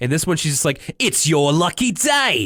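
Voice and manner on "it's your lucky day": wavering, slipping put-on Cockney accent, very slow. Imitating a cook whose accent slips: imitating a slipping accent. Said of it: "accent kind of slipping in and out".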